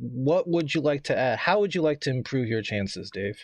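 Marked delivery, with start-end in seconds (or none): none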